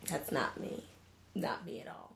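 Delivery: quiet whispered voice.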